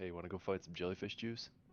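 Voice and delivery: quiet, soft, hushed half-whispered aside. Voicing a character inviting another to find jellyfish juice: half-whispering in character. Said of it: "Hank whispered to George".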